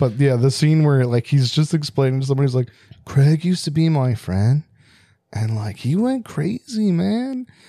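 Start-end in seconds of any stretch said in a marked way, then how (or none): 3.0-7.5 put-on laid-back stoner drawl, slow and swooping. Quoting an untrained actor's movie scene line, the speaker does a stoner voice. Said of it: "you sound more like a stoner than he did".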